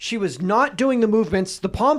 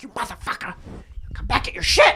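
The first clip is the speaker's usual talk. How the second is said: restrained, angry outburst; 8 semitones higher than usual. Speaker retells a woman in a group yelling at a man: retelling her screaming at him. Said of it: "like screaming at him".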